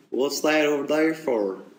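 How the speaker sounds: dim-witted American Southern accent. Showing the accent used to sound not so bright: dumb American Southern accent. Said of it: "the dumb accent".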